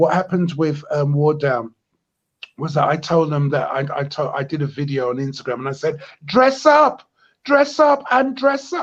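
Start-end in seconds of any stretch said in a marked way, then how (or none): 6.3-8.8 put-on West Indian accent, very high and loud. Quoting an Instagram video, the speaker repeats it in a West Indian accent. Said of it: "in a West Indian accent".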